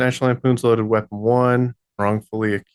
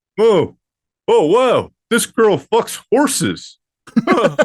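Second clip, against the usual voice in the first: very high, swooping alien puppet voice; 9 semitones higher, 3 dB louder than usual. Reacting to another player's answer, in an ALF voice. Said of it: "That's a really good Alf voice".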